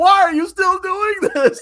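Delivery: shrill, loud scream at very high pitch. Retelling how the character complains in later films: imitating Adrian screaming. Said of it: "screaming at him".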